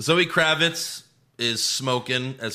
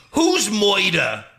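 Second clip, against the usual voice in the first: over-the-top cartoon villain, loud, raised, high-pitched, hammy; 8 semitones higher, 5 dB louder than usual. Mocking an over-the-top villain performance: imitating Colin Farrell's Penguin. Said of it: "like a shitty Tony Soprano, shitty Robert De Niro impression".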